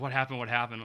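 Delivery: ordinary delivery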